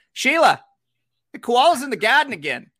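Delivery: imitated Australian narrator voice. Recalling a sponsor's commercial narrated by an australian guy: imitating an australian narrator. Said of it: "there was like an Australian guy narrating it".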